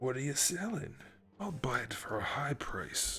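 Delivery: put-on hushed, murmured shopkeeper voice sliding toward Scottish accent. Joking about console buyers, slipping into the Resident Evil 4 merchant voice. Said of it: "He almost got Scottish there".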